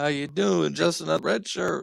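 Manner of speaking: failing, creaking voice, rough and drawn out. Greeting a guest who just joined: voice going. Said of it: "My voice is going".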